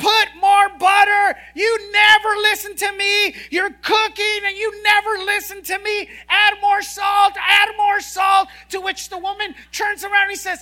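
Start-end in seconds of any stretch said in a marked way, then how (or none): 0.0-8.5 mock loud scream, higher and louder. Telling a joke, imitating a husband in the kitchen screaming. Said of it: "he begins to scream at the top of his voice".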